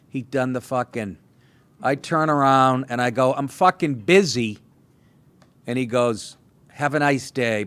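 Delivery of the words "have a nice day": mock snide, passive-aggressive tone. Speaker retells a man's reply after she turns him down, mimicking a passive-aggressive tone. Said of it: "he said it in that tone".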